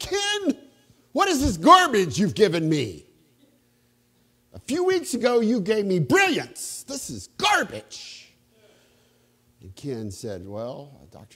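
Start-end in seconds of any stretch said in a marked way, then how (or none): 0.0-8.3 put-on loud, swooping, theatrical New England accent. Act out the gracious man turning quite aggressive with Ken, in Dr. Killian's dramatic New England voice. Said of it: "he had this kind of New England kind of dramatic voice".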